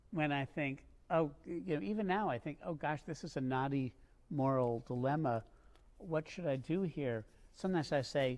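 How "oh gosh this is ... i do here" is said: normal talking voice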